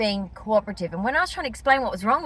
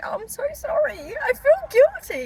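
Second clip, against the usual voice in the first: high, mock nervous, apologetic lady voice. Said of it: "It's all performance".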